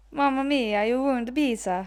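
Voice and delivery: Italian-accented voice. Playing an accent game after drawing Italian, in an Italian accent.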